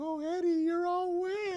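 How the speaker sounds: play-acted very high, drawn-out, slow weepy talk. Retelling a scene, voicing the character Angela: imitating Angela crying. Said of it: "she's like crying".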